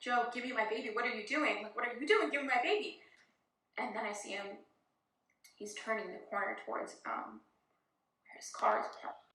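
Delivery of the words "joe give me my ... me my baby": frantic, pleading voice with panic building. Retelling pleading with Joe to give the baby back: imitating own rising panic. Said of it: "panic level starting to rise".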